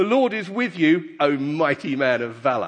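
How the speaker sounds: dripping, heavy sarcasm. Reading aloud the angel of the Lord's words to Gideon, hugely sarcastic. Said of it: "said with a hugely sarcastic tone".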